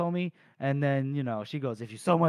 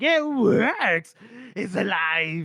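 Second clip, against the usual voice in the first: mock very slow, high, loud, laughing, gleeful delight; 6 semitones higher, 5 dB louder than usual. Retelling a character laughing at a building collapse: imitating a laughing character. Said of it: "he's laughing".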